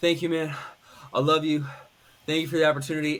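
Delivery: mock breathless, heavy breathing. Retelling an opponent's thanks right after a fight: imitating heavy breathing. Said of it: "he was, like, breathing heavy".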